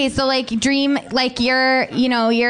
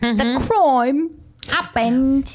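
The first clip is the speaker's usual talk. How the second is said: upper-class, very London, posh British accent. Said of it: "Is that a particular dialect you've picked up?".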